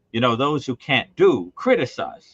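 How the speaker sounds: mock pointed, loud delivery. Recalling a remark at intermission to a companion, retelling saying it loudly. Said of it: "I said very loudly on purpose".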